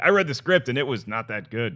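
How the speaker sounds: ordinary delivery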